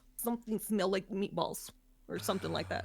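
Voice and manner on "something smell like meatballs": woman speaking in a put-on Russian accent. Imitating a woman's line from a radio clip: russian accent. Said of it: "it's a Russian accent, and she goes".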